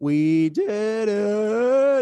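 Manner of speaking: cracked, breaking voice on a drawn-out "it". Closing out the episode with a cheer, voice cracking. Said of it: "Voice crack".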